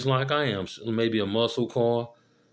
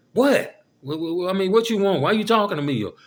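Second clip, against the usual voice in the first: snotty, cocky, nasty attitude, pitched up; 8 semitones higher, 4 dB louder than usual. Imitating a woman answering her man's question: imitating a cocky, nasty attitude. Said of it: "cocky, nasty ass attitude".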